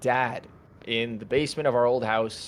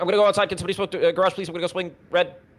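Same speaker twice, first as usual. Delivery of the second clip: dazed, spaced-out rambling with raised pitch; 7 semitones higher, 4 dB louder than usual. Describing types of players, imitating one who sounds on another planet. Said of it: "or on another planet".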